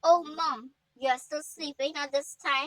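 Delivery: plain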